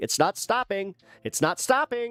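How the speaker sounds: high, frantic, panicked, with repeated words. Retelling the stepmom's words while the ear kept bleeding: imitating stepmom panicking. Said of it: "my stepmom's sitting there panicking".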